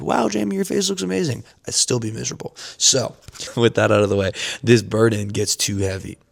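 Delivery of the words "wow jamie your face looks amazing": high, mock admiring, gushing praise. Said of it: "everybody said".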